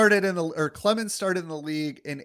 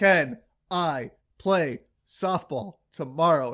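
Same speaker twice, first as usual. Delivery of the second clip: slow, halting speech, each word pushed out separately. Retelling a scene, a character who can barely talk asks a question, very slow, word by word. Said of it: "word by word, very slowly because he can barely talk".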